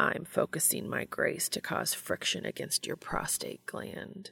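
rough, gravelly whispered voice. Reading Castiel's line to Dean in an intimate scene, Castiel's rough gravelly voice. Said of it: "Castiel's voice was rough and gravelly".

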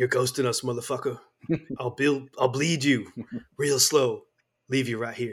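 put-on whisper. Recounting a favorite Predator scene, the speaker quotes Bill Duke to Carl Weathers, imitating his whisper. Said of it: "he goes in a whisper".

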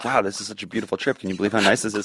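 soft, low, close hushed half-whisper. Retelling a calm moment on a boat trip: imitating a half-whisper. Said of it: "whispering to Marina's ears".

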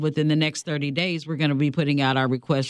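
ordinary talk, nothing marked

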